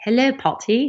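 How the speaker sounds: high, put-on English-accented voice. Retelling an email from an english sender, reading it aloud: english accent. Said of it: "I did an English accent".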